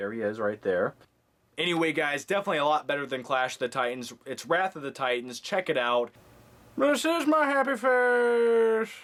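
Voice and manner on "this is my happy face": very high-pitched, very slow, drawn-out delivery. Joking while reviewing a movie that stars him: Tommy Lee Jones impression. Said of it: "That was my Tommy Lee Jones impression".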